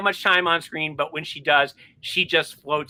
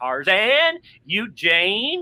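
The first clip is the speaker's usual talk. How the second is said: put-on swooping, swingy California accent; 4 semitones higher than usual. Describing a favorite Tarzan actor's way of talking, as Lex Barker's California accent. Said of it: "he sort of has like a California accent".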